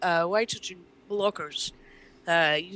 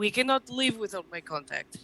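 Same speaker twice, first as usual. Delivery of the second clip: put-on Russian accent, higher pitch; 3 semitones higher than usual. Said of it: "how do I do this with a Russian accent?".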